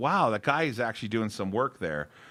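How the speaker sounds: ordinary talk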